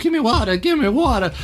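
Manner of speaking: high-pitched lady character voice.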